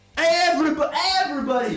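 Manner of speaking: loud high call-out.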